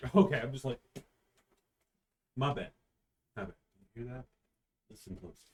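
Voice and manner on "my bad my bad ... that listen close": speaking very quietly, hushed. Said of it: "describe what I hear very quietly".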